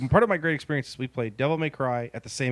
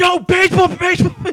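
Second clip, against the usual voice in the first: imitated screaming, higher and louder; 12 dB louder than usual. Retelling watching someone play a game: retelling a scream. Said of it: "screaming at him".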